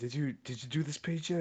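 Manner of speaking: mock whispering.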